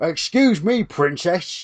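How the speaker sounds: fake, overdone Cockney accent. Quoting an actor's line from a film in bad Cockney.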